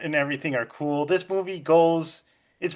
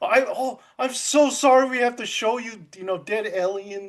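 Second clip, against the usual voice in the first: put-on, high, teary crying newsreader voice; 6 semitones higher than usual. Retelling a movie news anchor showing alien footage: imitating a crying news anchor. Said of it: "she's crying".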